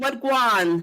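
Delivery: put-on Jamaican-accented speech. Quoting what he said to you, in a jamaican accent. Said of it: ""What in the Jamaican accent?".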